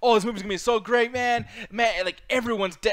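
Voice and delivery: high, hyped-up, over-the-top excitement. Retelling an actor spoiling a movie in an interview: imitating Mark Ruffalo, hyper and excited. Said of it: "he got really hyper and really excited".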